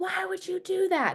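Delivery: flipped-out, very high, slow yelling.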